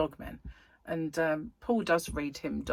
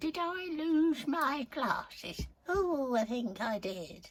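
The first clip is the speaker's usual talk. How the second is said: put-on slow, high elderly woman's voice; 9 semitones higher than usual. Repeating a question after noticing it sounded like an old lady: old lady voice. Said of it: "Sounded like an old lady then".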